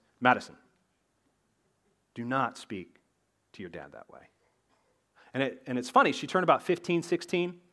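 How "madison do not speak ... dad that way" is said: low, firm, fatherly dad voice. Father retells getting firm with his daughter madison, put-on firm dad voice. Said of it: "I get dad voice".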